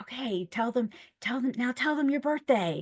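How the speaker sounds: quiet, hushed half-whisper, stage whisper. Retelling prompting her during a speakerphone call: imitating own past half-whisper. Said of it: "whispering a little bit".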